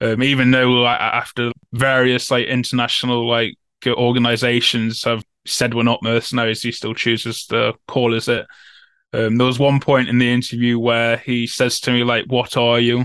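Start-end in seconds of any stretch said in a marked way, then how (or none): 12.3-13.0 put-on sarcastic tone. Retelling a question from the interview: imitating a sarcastic question.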